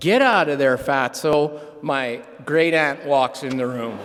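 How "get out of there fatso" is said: usual speaking voice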